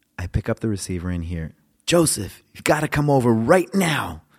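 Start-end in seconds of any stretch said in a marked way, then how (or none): 1.9-4.1 very loud, high, excited call. Retelling a late-night phone call from a man: imitating an excited caller. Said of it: "There was this excitement in this man's voice".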